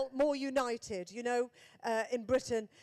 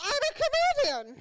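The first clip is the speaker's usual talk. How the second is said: very high, raised put-on upper-class English accent; 6 dB louder than usual. Retelling answering the Queen nervously: put-on posh accent. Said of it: "my Birmingham accent going up three social registers".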